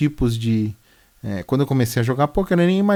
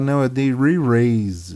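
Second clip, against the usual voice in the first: heavy, strongly marked put-on British accent; 2 semitones lower than usual. Retelling how a poker player said a word: imitating a put-on British accent. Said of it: "com um sotaque britânico".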